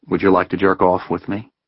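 plain reading voice

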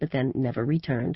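plain

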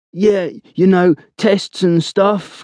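high, faltering, mocking tone. Cookie repeats Blowers' answer back to him, imitating Blowers' voice. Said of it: "imitating Blowers' voice".

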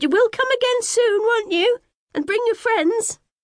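voice rising, climbing to very high pitch. A woman calls after the narrator leaving through the gate, voice rising. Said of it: "her voice rising".

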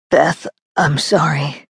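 mumbled under breath. A man, his strength spent, apologizes to the woman holding him up; muttered. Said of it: "he muttered".

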